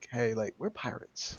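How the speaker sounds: very quiet whisper, close to the ear. A player says his character leans in to another, then acts it out whispering. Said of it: "He's gonna lean in and whisper like".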